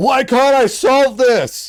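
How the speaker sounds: very high, booming, drawn-out yell. Retelling yelling in the shower at a problem: imitating own yelling. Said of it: "I start, like, yelling".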